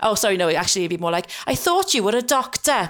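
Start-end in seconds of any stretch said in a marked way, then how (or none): 1.5-2.9 put-on very, very strong Welsh accent, pitched up. Retelling a woman's reply after being sent to see her gp, strong welsh accent. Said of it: "She's obviously very, very Welsh".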